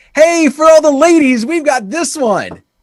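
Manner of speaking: very high, loud, put-on radio DJ hype voice. Describing hype that falls flat, the speaker mimics a radio DJ hype voice. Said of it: "do it as a radio D J".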